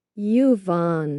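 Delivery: said slowly, drawn out. Asked to say a name's pronunciation more slowly, saying it slowly. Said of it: "say it slower".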